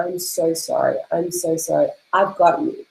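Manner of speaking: tearful, sobbing voice. Recalling hugging herself while tripping out, the speaker retells her own sobbing apology. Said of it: "I'm sobbing like a baby".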